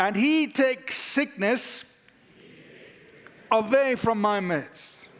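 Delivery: firm, emphatic conviction. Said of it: "say it like you really believe it".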